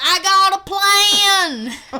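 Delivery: very slow and high, with the a drawn out. Retelling a scene for the others: Kevin Bacon impression. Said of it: "that was dead on accurate".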